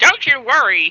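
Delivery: odd, shrill, very high, very loud voice. A voice speaks up from the desk in a weird voice. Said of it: "says a weird voice from the desk".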